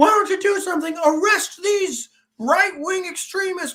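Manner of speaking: mock screaming. Retelling protesters yelling at the police: imitating people screaming. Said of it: "they started screaming at the police".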